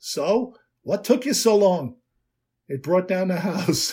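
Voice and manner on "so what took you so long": put-on thick, slow New York accent laid on heavily. Retelling a short speech at a convention in Mel's thick New York accent. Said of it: "in an accent you could smear on a New York bagel".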